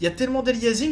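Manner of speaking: normal talking voice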